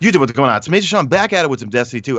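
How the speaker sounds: put-on thick New York accent, spoken quickly and rattled off. Recalling an old video of themselves, in heavy New York accent. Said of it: "and the heavy New York accent".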